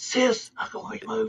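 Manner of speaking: put-on whisper. Acting out a man who whispers because someone is listening, mock whisper. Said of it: "why is he whispering? Why is he going".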